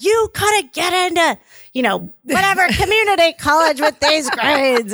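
high, scolding scream. Recalling their dad screaming at them in the college counselor's office, retelling dad's screaming. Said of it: "my dad's screaming at me like".

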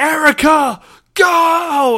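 very high, shrill screaming, drawn out. Retelling a coach yelling at a player late in a blowout: imitating a coach screaming. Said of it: "The coach is screaming from the top of his lungs".

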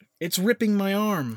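acted high, sudden crying-out voice. Narrating a bear attack, voicing Michelle as the bear claws her, retelling a cry out. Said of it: "She cried out".

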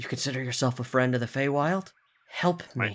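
soft, hushed half-whisper. An axe speaks into a player character's mind as they come close, half-whispering. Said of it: "you hear like a whisper in your brain".

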